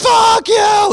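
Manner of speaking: high, loud, screaming voice.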